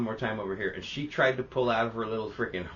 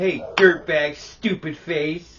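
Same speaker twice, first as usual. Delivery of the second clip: very loud, very slow, drawn-out furious bellow; 6 semitones higher, 8 dB louder than usual. Retelling how a man insulted a bird, mock-angry insults at a bird. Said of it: "He was angry at that bird too".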